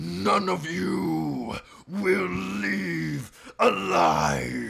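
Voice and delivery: very high, very loud, rasping booming cry. Narrating a scene as a voice booms down from the top floor: booming voice. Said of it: "you can just hear a booming voice".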